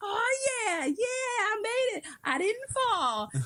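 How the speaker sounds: very high, swooping, thrilled, excited yelling. Recalling coming in, the speaker is retelling their own excited screaming. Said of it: "I was just screaming all the way in".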